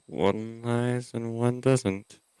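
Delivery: very slow, hushed mutter under the breath. Voicing Kelnar's aside about the twin guards: muttering under his breath. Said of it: "Kelnar says under his breath".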